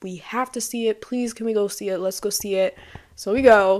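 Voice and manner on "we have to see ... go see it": mock pleading, begging tone. Retelling how Calvin begged to see the movie: imitating someone begging. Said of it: "begged to go see this movie".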